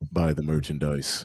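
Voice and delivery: very deep, quiet voice. Plugging the show's merchandise to listeners: God voice. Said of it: "listen to the God voice".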